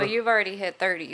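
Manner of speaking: ordinary talk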